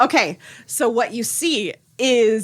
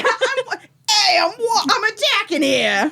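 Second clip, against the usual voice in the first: bad put-on New York accent, very high-pitched; 10 semitones higher than usual. In a roleplay scene, declaring an attack in a bad new york accent. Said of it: "cursing in a bad New York accent".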